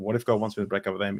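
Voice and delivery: anxious, worried-sounding voice. Retelling being made to repeat a dreaded sentence: retelling own anxious words. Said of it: "my anxiety is building".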